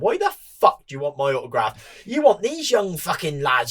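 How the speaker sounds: put-on Irish accent with big swooping pitch. Retelling Robert refusing to sign an autograph: Robert's Irish accent impression. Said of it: "in his Irish".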